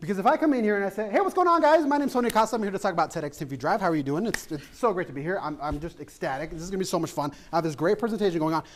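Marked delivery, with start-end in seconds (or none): 1.1-8.6 speaking way too quickly, rushed and rattled off. Showing learners what rushed delivery sounds like: talking too fast. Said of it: "You have to be mindful of your rate of speech".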